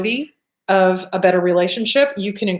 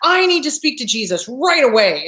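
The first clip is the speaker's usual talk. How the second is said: mock furious, seething, viciously angry insistence; 4 semitones higher than usual. Telling a joke, voicing a drowned man at heaven's gate, mock viciously angry. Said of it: "viciously angry".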